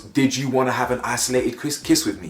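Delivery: ordinary talk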